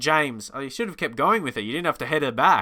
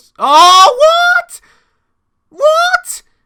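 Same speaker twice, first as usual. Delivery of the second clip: aggressive shriek, very high and very loud; 15 dB louder than usual. Reacting to a penalty call in a football game: aggressive high-pitched voice. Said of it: "I went too aggressive to a high voice".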